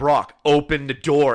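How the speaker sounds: mock mad, loud, angry, frustrated tone. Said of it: "getting more and more mad".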